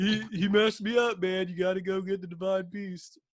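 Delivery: voice of a rock-creature warrior. Talking about the Hyrule Warriors champions, do a Goron impression. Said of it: "That's very spot on impression".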